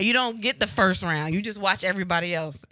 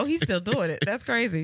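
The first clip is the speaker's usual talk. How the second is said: ordinary talk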